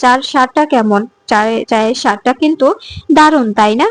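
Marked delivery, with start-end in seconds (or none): none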